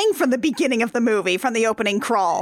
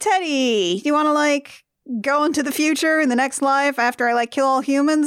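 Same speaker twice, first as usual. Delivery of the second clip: ordinary talk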